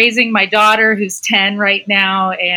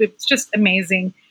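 teary, choking up, near tears; 2 semitones lower, 5 dB quieter than usual. Telling the playwright how reading the play affected her, getting teary-eyed. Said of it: "I'm going to get teary-eyed right now".

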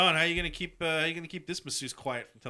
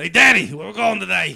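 very loud, rough, angry put-on New York accent; 4 semitones higher, 14 dB louder than usual. Trying a voice for a joke movie line: put-on angry New Yorker voice. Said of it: "I think that's just an angry New Yorker".

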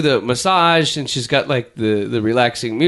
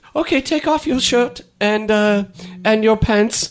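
bad put-on French Canadian accent, much higher; 7 semitones higher than usual. Retelling what a French Canadian masseuse told her, in a bad French Canadian accent. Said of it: "I can't even do a Canadian accent".

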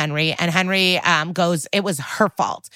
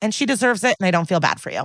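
usual speaking voice

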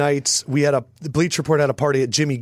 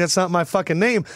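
ordinary delivery

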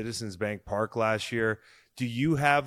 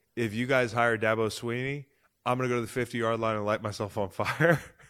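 ordinary talk, nothing marked

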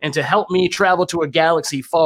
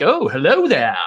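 friendly, easygoing, nice tone. Coaching a friend on an impression, showing a friendly Obi-Wan impression. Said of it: "You got to get friendly with it".

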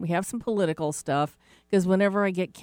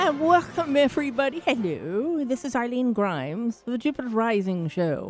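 high-pitched, slow British accent; 7 semitones higher than usual. Opening the show with a welcome: Queen Elizabeth voice. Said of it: "I was trying to channel Queen Elizabeth".

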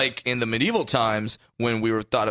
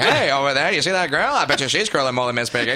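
put-on old-timey 1920s-style delivery, higher and louder; 4 semitones higher, 4 dB louder than usual. Acting out a compliment from the nineteen twenties: old-timey 1920s voice. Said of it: "that sounds like a nineteen twenties compliment".

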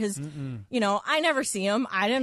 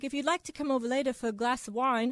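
put-on Australian accent; 3 semitones higher, 4 dB quieter than usual. Retelling what a flirtatious neighbour said: imitating an Australian accent. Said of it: "he had, like, an accent. He's, like, Australian or something".

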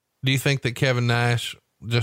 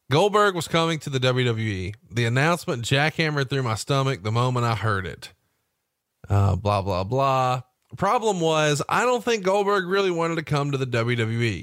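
ordinary talk, nothing marked

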